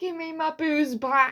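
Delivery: mock in-your-face screaming outburst, high. Retelling a street quarrel seen on the way from work: imitating a woman screaming. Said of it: "in his face, screaming, and she's like".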